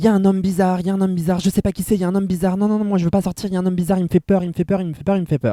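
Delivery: mock frightened, high, rushed, repeating, panicked screaming babble. Recalling a classmate who ran back from the gate, retelling a panicked scream. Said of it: "en hurlant".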